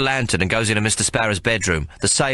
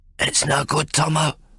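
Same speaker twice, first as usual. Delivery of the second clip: raspy, hoarse rasping voice; 5 semitones higher than usual. Over a dead girl, a man speaks to the narrator in a raspy voice. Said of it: "Johnny Terrible's voice rasps".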